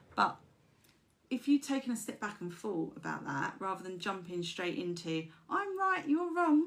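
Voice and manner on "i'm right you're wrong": tiny, high, little put-on voice. Giving advice on arguments, speaker voices someone insisting they're right: little voice. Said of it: "I don't know why I'm doing that little voice".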